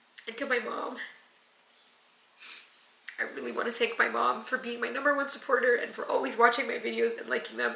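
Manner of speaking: high, tearful voice, crying through the words. Thanking supporters and their mom on the channel, crying while talking. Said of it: "I can't believe I'm crying right now".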